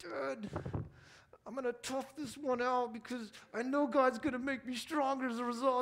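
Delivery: brave, high-pitched voice fighting back tears. Retelling a bleeding son's words: imitating someone fighting back tears. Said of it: "my little guy is just fighting back tears".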